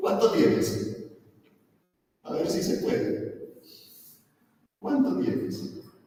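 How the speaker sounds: very high, taunting, mocking tone. Voicing god answering someone who offers money for salvation: mocking tone. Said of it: "Dios con un tono burlón".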